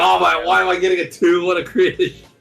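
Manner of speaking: mock crying, fake tearful whining. Voicing a crying card character awaiting a low rating: mock crying. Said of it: "that's why she's crying".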